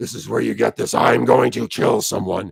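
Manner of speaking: menacing, rough, creaky monster voice, bottom of range. Speaker demonstrates going down to the bottom of the range: monster voice. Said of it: "this sort of monster voice".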